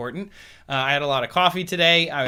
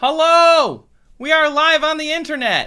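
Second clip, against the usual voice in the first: very high, very loud excited yelling; 14 semitones higher, 9 dB louder than usual. Host opening a live internet stream, excited: excited yelling. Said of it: "I don't know why I'm yelling".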